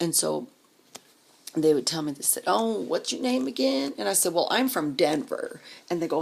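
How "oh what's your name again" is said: high, drawling put-on southern accent. Retelling how Mississippi people asked the speaker's name, in a put-on Southern drawl. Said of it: "Southern drawl".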